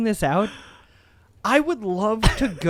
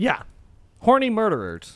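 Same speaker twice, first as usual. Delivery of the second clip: plain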